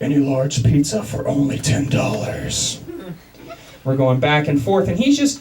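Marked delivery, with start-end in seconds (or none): 0.0-2.8 slow, rasping, gravelly superhero voice. Retelling taking a pizza order while doing a gravelly Batman voice. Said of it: "So I started doing the Batman voice right back to him".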